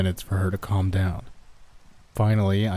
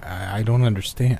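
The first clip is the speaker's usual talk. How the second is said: ordinary delivery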